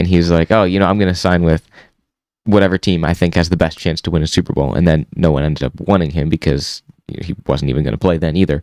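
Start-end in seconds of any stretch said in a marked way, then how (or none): none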